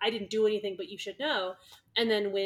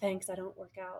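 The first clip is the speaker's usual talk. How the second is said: put-on whisper, much quieter; 8 dB quieter than usual. Retelling a couple's moment, acting out how she whispers back to him. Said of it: "she just whispers back".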